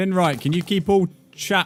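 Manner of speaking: high-pitched, loud calling-out voice.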